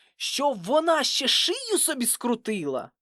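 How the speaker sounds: very high, annoyed, irritated tone. A father answers his son's question about the broken bike: irritated. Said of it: "роздратовано зиркнув на сина".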